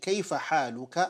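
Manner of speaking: normal talking voice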